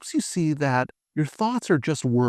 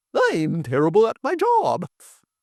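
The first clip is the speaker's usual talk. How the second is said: over-the-top, swooping, exaggerated cartoon voice; 4 semitones higher than usual. Demonstrating repeating a negative thought out loud, exaggerated cartoon voice. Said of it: "repeating it in a funny accent or an exaggerated cartoon voice".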